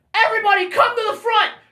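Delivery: loud high shouting. Retelling how an opening band kept yelling at the crowd: imitating a band yelling at the crowd. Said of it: "kept doing the thing that was like".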